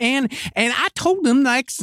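put-on high-pitched, sweet voice with Southern accent. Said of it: "It'd be more like".

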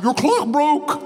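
called out high and slow.

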